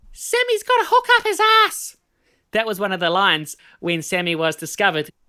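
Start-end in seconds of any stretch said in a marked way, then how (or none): 0.2-2.0 very high-pitched, loud, shrill cry. Quoting a line from the story about sammy, in a high-pitched voice. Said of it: "I said it in a high pitched voice".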